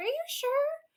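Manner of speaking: high, squeaky pleading voice.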